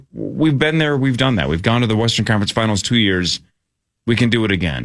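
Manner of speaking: normal talking voice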